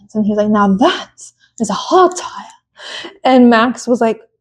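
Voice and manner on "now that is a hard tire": put-on wildlife documentary narrator delivery. Retelling a team radio reply to Max: imitating GP as a nature documentary narrator. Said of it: "really sounded like a nature documentary".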